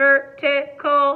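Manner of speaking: robotic put-on voice. Leading listeners in repeating a word, saying it in a robot voice. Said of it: "How about we say it like a robot?".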